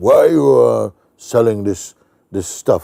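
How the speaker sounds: very strong, forceful voice. Retelling what an elderly man on the street asked him, in a very strong voice. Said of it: "in a very strong voice".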